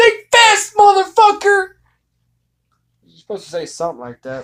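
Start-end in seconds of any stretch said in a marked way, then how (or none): 0.0-1.7 very loud, high, shrill yelled taunt. At the game table, his character shouts at the Redbrand before shooting: yelled taunt. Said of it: "he yells at the Redbrand".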